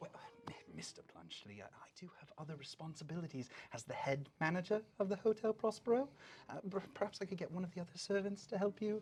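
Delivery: lofty upper-class voice. Acting out the rabbit folk character's reply in a story, in a posh accent. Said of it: "talking in like this posh accent".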